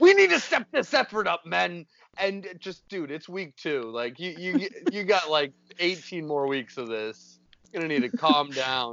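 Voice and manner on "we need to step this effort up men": high-pitched, raspy, unhinged, crazed ranting yell. Retelling a coach gone wild in week two, imitating a crazed coach yelling. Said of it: "just batshit crazy".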